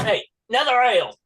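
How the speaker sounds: very high-pitched, loud shout. Voicing a character who calls for another ale: shouting for another ale. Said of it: "he shouts out".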